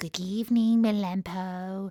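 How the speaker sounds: sweet, soft-spoken voice. Narrator reads a visitor at the doghouse door greeting the one inside, sweet voice. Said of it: "said in a sweet voice".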